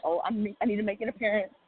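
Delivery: ordinary talk, nothing marked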